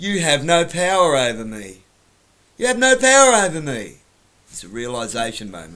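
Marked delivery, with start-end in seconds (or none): 0.0-4.0 terrible put-on high girl's voice, loud. Acting out a scene's realization moment, the speaker uses a terrible girl's voice. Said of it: "I've got a terrible girl's voice".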